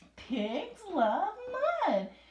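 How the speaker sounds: loud, sing-song, eager and excited reading. Reading a short sentence ending in an exclamation point: excited reading. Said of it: "I read it like I was excited".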